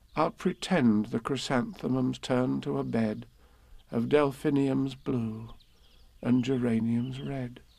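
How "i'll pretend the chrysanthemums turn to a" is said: plain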